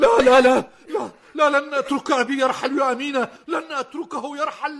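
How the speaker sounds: loud, distraught, anguished outcry full of grieving despair. A young man whose father has just died, told not to despair: distraught, grieving. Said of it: "فلا تجزع".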